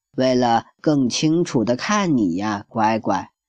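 ordinary delivery

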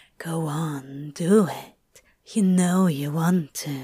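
low, coaxing, egging-on, urging whisper. A narrator reads one character urging another to take the lead, in a whisper. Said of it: "Crowley urged in a whisper".

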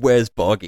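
mock scream, very loud. Retelling entering a game level with a friend, retelling a scream. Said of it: "I just screamed".

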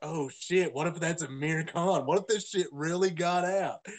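usual speaking voice

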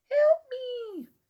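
very high, faint, barely-there cry. Recounting a scene where Brenda hears a voice outside: a faint cry for help. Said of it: "Very faintly".

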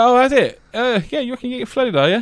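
high, loud, mock sarcastic scoff. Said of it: "I was like".

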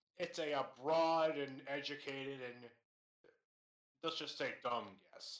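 slow, drawn-out giant adventurer character voice. Playing a goliath in a roleplaying game, a player speaks in Gerg the Goliath character voice. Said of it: "I'm GERG, the Goliath".

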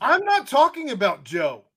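yelling angrily. Arguing about the offensive line with another speaker: yelling at co-host. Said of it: "I don't mean to yell at you".

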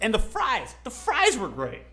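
voice cracking. Giving a verdict on a meal's waffle and fries, voice cracking. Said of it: "I don't know why my voice cracked".

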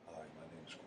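very soft, low, hushed, seductive voice. Teasing about a podcast member's voice: imitating Corb's sexy voice.

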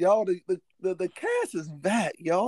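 joyful voice. Addressing the audience as the cast returns, happy. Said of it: "Y'all don't hear it in my voice".

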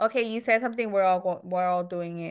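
ordinary delivery

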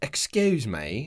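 clumsy, unconvincing put-on British accent. Taking turns at british accents, the speaker tries an apology in a bad british accent. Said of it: "You've been listening to the Harry Potter books".

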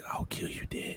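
mock calm threatening whisper. Joking about someone scary, acting out a whispered threat in someone's ear. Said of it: "Whisper I mean, that shit in your ear like".

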